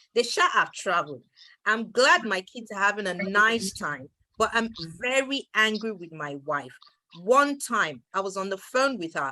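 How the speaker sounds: ordinary talk, nothing marked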